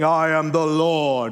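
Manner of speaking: acted grandiose, booming, very slow proclamation. Imitating a voice from old movies proclaiming a line: big booming voice. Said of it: "there's big booming voice saying".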